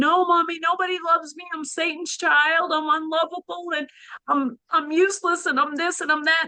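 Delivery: high, rambling run-on, going on and on. Retelling pleading with her mother in a dream: imitating own rambling. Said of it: "And I'm rambling on".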